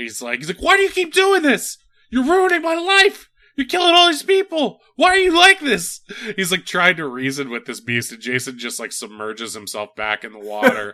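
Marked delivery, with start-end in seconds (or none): 0.6-6.0 very high, loud, frantic yelling. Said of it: "he's, like, yelling at Jason".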